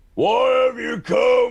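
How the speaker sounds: loud high shout. In a tabletop role-play, a player's character shouts a question to newcomers: shouting out. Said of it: "I shout out".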